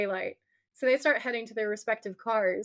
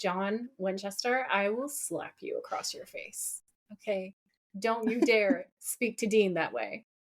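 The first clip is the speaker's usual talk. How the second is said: fierce, furious outburst; 2 semitones lower, 4 dB quieter than usual. Retelling own reaction to a TV scene, retelling own rage. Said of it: "that was my rage".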